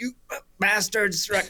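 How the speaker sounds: put-on very high yell in New Zealand accent. Retelling a man yelling at sheep on the road: retelling a New Zealand-accented yell. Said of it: "in his New Zealand accent".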